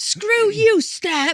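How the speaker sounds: shrill, very high-pitched, loud scream. Recalling being afraid on a ladder, the speaker reenacts screaming at it. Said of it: "screaming at it".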